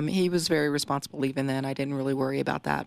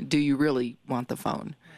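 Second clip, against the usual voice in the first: mock-menacing, threatening delivery. Recounting how a man picked up a phone as if to strike the speaker, retelling a menacing question. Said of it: "he asked me very menacingly".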